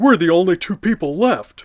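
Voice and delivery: high, loud cartoon voice cry. Reading a SpongeBob book aloud, voicing Patrick: Patrick voice. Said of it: "But that one I can kinda do".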